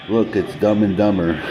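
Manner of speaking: normal talking voice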